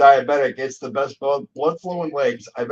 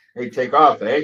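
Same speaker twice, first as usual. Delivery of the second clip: put-on Canadian voice, louder; 4 dB louder than usual. Answering a remark about hanging out with Bob and Doug McKenzie: Bob and Doug McKenzie voice. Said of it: "hanging out with Bob and Doug McKenzie".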